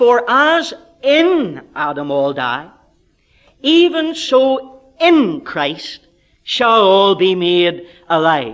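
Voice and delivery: heavy stress on the word in. Rereading the verse aloud, stress on the word in. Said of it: "Let's read it again, emphasizing the word in".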